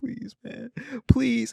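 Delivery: high, play-acted tearful, begging voice. Retelling a show scene where a shot man is found: imitating someone crying and begging. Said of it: "He's crying. He's like".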